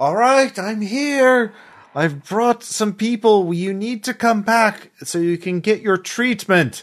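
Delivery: crackly, high-pitched shout. Narrating a game, Chase yells out after bringing people, Chase yelling out, crackling. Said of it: "a crackling Chase yells out".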